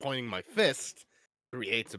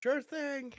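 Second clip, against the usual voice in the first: very high, far-off shout. Answering a companion from across the warehouse: yelling from across the room. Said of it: "I'm just gonna yell out from over here".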